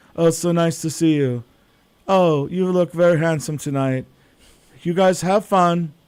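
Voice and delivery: put-on German-accented speech. Imitating a high school girlfriend's mom, who is from Germany: imitating a friend's mother's accent. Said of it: "she talked like this".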